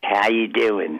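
very nasal Baltimore regional accent. Explaining where their way of speaking comes from, showing a nasal Baltimore accent. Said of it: "That's the Baltimore accent".

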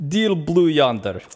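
put-on decent, slow, heavy Russian accent. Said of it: "I can do a decent Russian accent".

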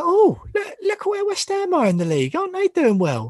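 mock surprise, very high-pitched and loud.

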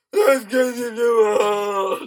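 booming monster voice, very loud. Describing a doctor character who comes in to see you, doing a Dr. Halloween impression. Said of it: "the most perfect impression of Dr".

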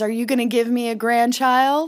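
ordinary talk

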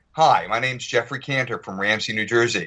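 showy put-on American accent. Retelling showing people who asked to hear it an American accent. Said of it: "I do a pretty good American accent".

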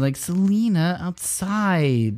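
somewhat whiny, high-pitched delivery. Picturing how she would say one word, whiny Selena voice. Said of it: "I picture more like kind of whiny".

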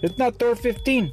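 slight put-on Mexican accent, very high pitch. Retelling what the yard dog told him, in a little Mexican accent. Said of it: "in this little Mexican accent".

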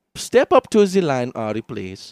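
German accent drifting Indian. Trying a German accent, calling someone up to the line: German accent drifting Indian. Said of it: "I don't know why my German goes Indian".

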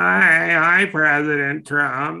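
slow, sour, mocking voice, hi drawn out. Mocking a rival's voice with a quick impression: imitating Ron DeSantis's voice. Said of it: "his sour milk voice".

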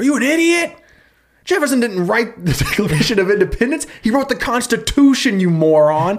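furious, high screaming tirade. Retelling a man screaming at a sign painter, imitating someone screaming. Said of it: "He starts screaming at this guy".

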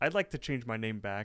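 ordinary delivery

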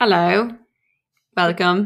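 put-on British accent. Podcast host greets listeners at the start of the episode, put-on British accent. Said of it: "I don't know what accent that was".

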